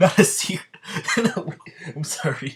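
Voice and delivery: laughing while talking. Reading a story aloud after misreading a word, laughing while talking. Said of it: "I didn't mean to laugh like that".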